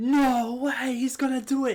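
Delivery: acted screaming. Retelling watching wrestling on tv: imitating screaming. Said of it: "we were screaming".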